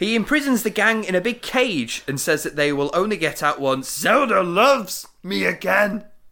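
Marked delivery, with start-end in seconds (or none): 3.6-6.0 high, slow, stretched-out cartoon villain voice. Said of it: "in his weird sort of comedy, high-pitched, cartoony voice".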